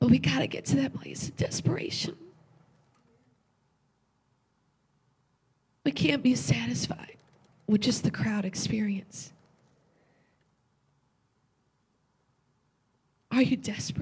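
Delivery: tearful voice, crying while speaking. Preaching to listeners tonight after saying they feel touched: crying while talking. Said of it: "I don't know why I'm crying".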